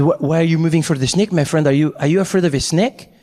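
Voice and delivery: French-man voice, stumbling delivery. Retelling what the French man next to him asked: imitating the French man. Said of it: "He said".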